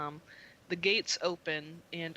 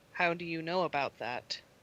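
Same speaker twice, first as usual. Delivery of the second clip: icy voice through an intercom. Voicing a voice on an intercom answering the players: cold intercom voice. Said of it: "the voice on the intercom very coldly says".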